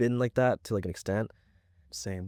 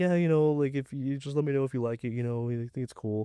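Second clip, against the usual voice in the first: mock shy, timid, humble, self-effacing tone; 4 semitones higher than usual. Retelling how someone shyly offered his work: imitating someone timid and humble. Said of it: "almost kinda timid".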